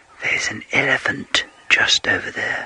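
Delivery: quiet, hushed whisper. Speaker watching a herd in thick bush, pointing out a nearby elephant, speaking quietly. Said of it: "the reason I'm speaking so quietly".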